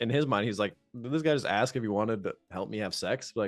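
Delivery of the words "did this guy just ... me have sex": plain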